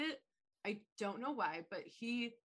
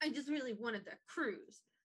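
put-on pissy, sulky delivery; 3 semitones higher than usual. Retelling a movie scene, giving his answer when asked why he's pissy: imitating a pissy sulk. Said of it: "Tim Allen just gets pissy".

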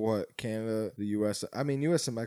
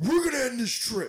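mimicked harsh strict father voice, higher and louder; 14 semitones higher, 5 dB louder than usual. Retelling what a dad at the airport says: imitating a hard-ass dad. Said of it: "he gets real hard ass".

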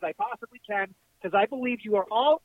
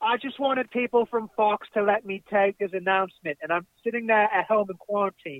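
terrible, laid-on, bad put-on British accent. Retelling what a woman said, the speaker does a terrible british accent. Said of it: "sorry for my terrible British accent".

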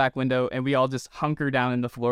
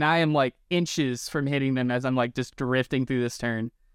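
ordinary delivery

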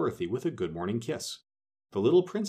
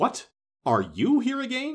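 very high, harsh, shrill delivery; 13 semitones higher, 5 dB louder than usual. Narrator reads a voice calling to a girl entering the great hall; rather harsh tone. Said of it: "a voice called out in a rather harsh tone".

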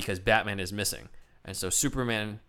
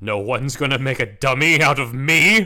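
booming, drawn-out, slow and big; 4 semitones higher, 9 dB louder than usual. Reading Batman's radio line aloud: Adam West voice. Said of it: "I'll say this as Adam West".

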